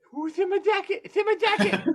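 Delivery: mock very high, breathless, gasping, insistent voice. Retelling a rescue, the speaker imitates Ernie's asthma attack. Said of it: "he's having an asthma attack, and he's screaming at me".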